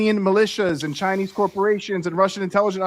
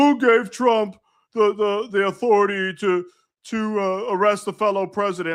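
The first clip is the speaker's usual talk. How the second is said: slow, stumbling megaphone protester voice. Retelling a protester shouting into a megaphone: imitating a protester with a megaphone. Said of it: "some fucking complete dipshit sitting there with a megaphone, like".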